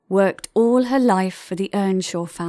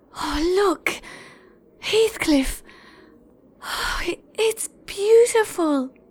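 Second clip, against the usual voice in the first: high, out-of-breath, gasping exclamation; 11 semitones higher than usual. Narrating a girl reaching the hilltop and calling out to Heathcliff, out of breath. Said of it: "as she slowly got her breath back".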